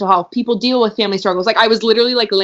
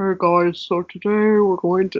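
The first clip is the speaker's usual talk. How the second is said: imitated throaty voice from the back of throat; 4 dB quieter than usual. Describing an online class instructor's voice to friends, imitating his throaty voice. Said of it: "like in the back of his throat".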